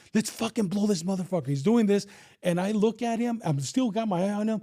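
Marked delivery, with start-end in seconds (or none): 0.2-1.5 mild, mock shout-style yelling. Retelling what a cop beside them said during the standoff: imitating someone yelling. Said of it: "he's yelling".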